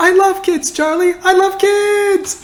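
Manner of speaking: very high, slow, drawn-out yell. Quoting Pim's line about loving kids: imitating Pim yelling. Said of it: "I really wouldn't, uh, yell that loud".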